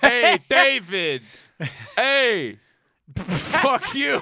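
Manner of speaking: very slow, loud, drawn-out heckling insult. Doing an impression of a roast battle at another speaker: imitating a roast battle insult. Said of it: "That's my impression of a roast battle".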